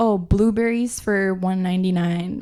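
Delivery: normal talking voice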